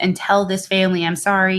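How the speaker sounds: ordinary delivery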